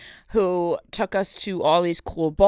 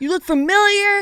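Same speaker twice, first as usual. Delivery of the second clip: acted-out frantic freaking out, pitched higher; 13 semitones higher than usual. Retelling how an owner recognized them: imitating owner going crazy. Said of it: "He was going crazy".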